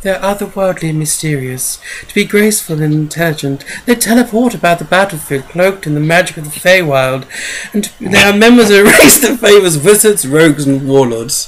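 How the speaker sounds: put-on storybook fairy-folk voice. Reading out a description of the fairy folk, the speaker uses a fairy voice. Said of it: "I put on my fairy voice for them".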